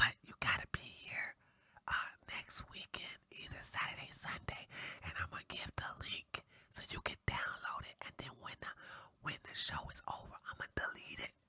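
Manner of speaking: hushed, soft, secretive whisper. Telling viewers to put their ear close to the speaker, whispering. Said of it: "I'm gonna whisper in your ear".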